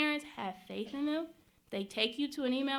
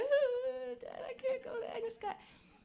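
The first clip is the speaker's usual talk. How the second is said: mock tearful crying wail, very high pitch; 10 semitones higher than usual. Retelling crying alone in the bedroom after a father's refusal: imitating own past crying. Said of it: "I'm crying".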